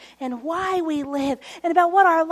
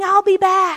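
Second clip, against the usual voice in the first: put-on Australian accent; 3 semitones higher, 6 dB louder than usual. Retelling the end of the incarnation story, the speaker voices Jesus's words in an Australian accent. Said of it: "In an Australian accent".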